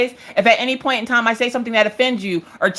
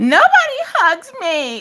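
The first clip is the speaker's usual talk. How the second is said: put-on very high, swooping small-child voice; 11 semitones higher than usual. Retelling what Maggie says when the couple hugs: imitating Maggie. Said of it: "here comes Maggie".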